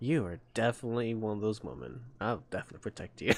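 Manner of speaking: very hushed, smug, self-satisfied voice. Reading a character's smirk aloud as if they were speaking. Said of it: "This smirk of Ether is like".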